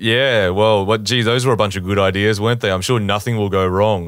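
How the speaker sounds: imitated sarcastic tone, mock sarcasm. Describing how the show treats a bad plan: imitating a sarcastic tone. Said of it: "it's sarcastic".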